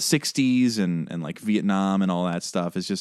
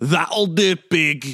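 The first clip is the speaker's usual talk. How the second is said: loud line belted out badly, pitched up; 9 semitones higher, 5 dB louder than usual. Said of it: "That was not a very good impression".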